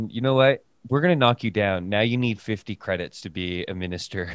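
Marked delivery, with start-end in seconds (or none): none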